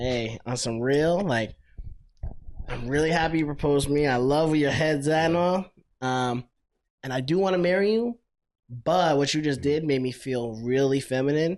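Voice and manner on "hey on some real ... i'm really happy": plain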